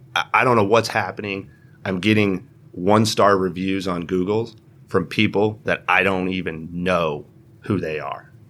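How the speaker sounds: normal talking voice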